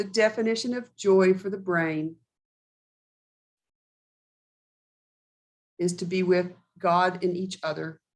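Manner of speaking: very slow, drawn-out, dictation-like pace. Slowing down so someone can write it down, saying it really slowly. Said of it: "I'll say this really slow".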